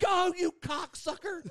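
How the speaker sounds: shrill, very high, flat-out top-of-lungs screaming. Retelling yelling in the car while waiting for a parking spot, retelling a scream. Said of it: "I'm screaming at the top of my lungs in the car".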